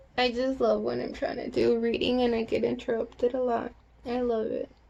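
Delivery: sarcastic, mock-loving, complaining tone.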